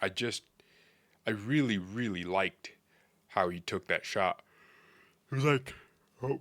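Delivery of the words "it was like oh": yawning, higher pitch. Praising a young player's shot while recording a video, yawning. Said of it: "sorry, I'm yawning".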